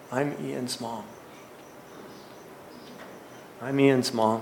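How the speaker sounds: slight little voice, faint, barely-there whisper. Retelling a woman in a camp chair introducing herself, barely a whisper. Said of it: "this slight voice barely whispered".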